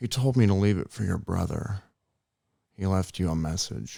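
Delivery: low, deep movie-star voice. Doing an impression for the other speaker to guess: Nicolas Cage voice. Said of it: "It was Nicolas Cage".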